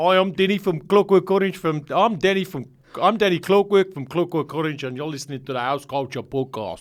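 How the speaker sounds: put-on South African accent. Trying out accents for a podcast intro, in a South African accent. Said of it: "South Africa".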